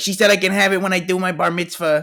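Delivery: very high, nerdy, prissy voice. Quoting a big nerd who is a mama's boy: Joe voice. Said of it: "I was just doing that impression".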